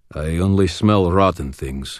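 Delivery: plain reading voice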